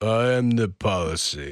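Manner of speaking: very slow, deliberate, drawn-out put-on drawling accent. Answering a challenge to say the line in a Stallone accent. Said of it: "I can do a Stallone accent".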